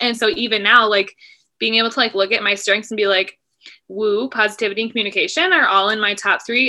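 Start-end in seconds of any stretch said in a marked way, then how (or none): none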